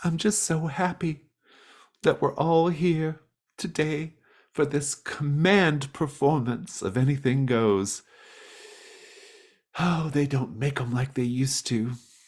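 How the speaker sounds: weepy, very high-pitched, tearful gush. Voicing Dolores, who has tears in her eyes: tearful. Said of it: "she's got tears in her eyes".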